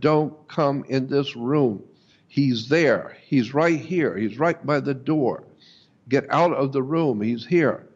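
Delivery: normal talking voice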